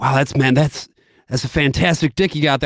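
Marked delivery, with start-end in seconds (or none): none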